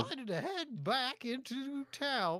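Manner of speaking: put-on cowboy accent. Reading the on-screen game character's text aloud, in an attempted cowboy accent. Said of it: "I appreciated your attempt at a cowboy accent".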